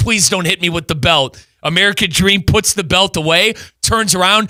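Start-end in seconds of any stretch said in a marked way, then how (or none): none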